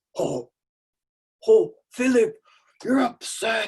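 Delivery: loud, high-pitched storybook cartoon bear voice. Speaker calming an upset child after screen time, bear voice. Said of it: "I suddenly go into my bear voice and I go".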